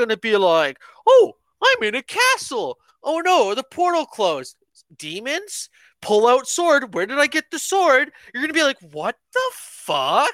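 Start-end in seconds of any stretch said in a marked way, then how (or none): 1.1-8.1 high, squeaky, swooping cartoon voice. Retelling how someone described a fantasy scene, in a Mickey Mouse voice. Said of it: "you start off sounding like Mickey Mouse".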